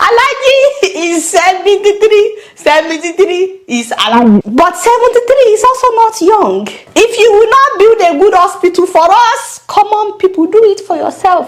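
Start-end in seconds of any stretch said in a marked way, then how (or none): 0.0-4.4 slow, held-back laughter breaking through mid-sentence. A speaker addressing viewers repeats a statement while trying not to laugh. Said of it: "I'm trying not to laugh".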